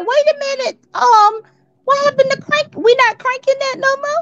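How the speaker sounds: high, puzzled, baffled squeak.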